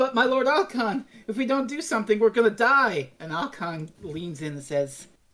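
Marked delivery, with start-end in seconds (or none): 0.0-3.1 put-on pleading voice, higher. Retelling Habris begging his lord Alcon: voicing Habris pleading. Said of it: "and he's like".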